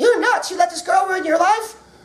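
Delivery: high-pitched cartoonish voice. Acting out a Raging Bull scene as cartoon characters, the speaker does Rocky the Flying Squirrel. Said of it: "I did my Rocky the Flying Squirrel".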